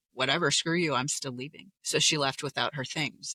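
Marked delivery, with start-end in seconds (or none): none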